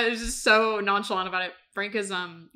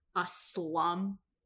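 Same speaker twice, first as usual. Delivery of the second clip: quieter put-on venomous voice through clenched teeth; 9 dB quieter than usual. Retelling a scene where she answers him: imitating Emmy talking through teeth. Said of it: "talking through her teeth".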